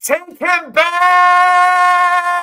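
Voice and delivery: very high, loud yell, stretching out back. Retelling what was yelled at the Packers in the end zone: retelling own yell. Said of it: "the whole time I'm yelling".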